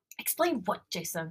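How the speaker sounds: furious, seething, angry whispering. Reading a story aloud, confronting the ex on the phone: angry whisper. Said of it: "I whisper angrily".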